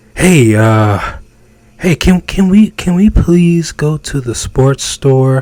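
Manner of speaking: meek, passive, hedging voice with halting stumbles. Speaker demonstrating one way a man asks a woman for something, passive asking. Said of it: "It was more passive".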